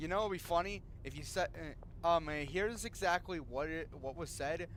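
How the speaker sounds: plain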